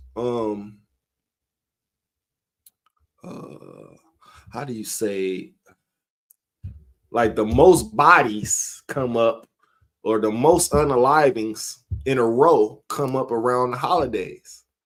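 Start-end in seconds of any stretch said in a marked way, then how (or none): 7.1-13.8 slowing down after fast talking. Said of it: "I'm talking too fast".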